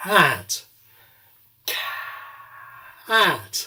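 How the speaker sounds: slow cat, whisper switching to voice midway. Demonstrating the word cat, beginning whispered and turning on voice halfway through. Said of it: "beginning with whisper and then turning on voice halfway through".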